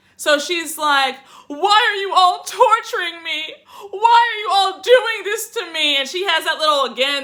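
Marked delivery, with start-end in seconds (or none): 1.5-6.0 play-acted, over-the-top, high, fake-crying whine. Retelling a cast member's fake tearful plea: imitating fake crying plea. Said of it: "give her best Oscar-worthy performance".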